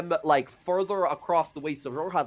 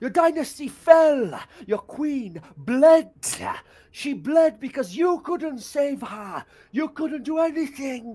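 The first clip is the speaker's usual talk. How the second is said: screaming, yelling, higher; 9 semitones higher, 4 dB louder than usual. Voicing a captive screaming at the party: screaming. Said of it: "And he just screaming".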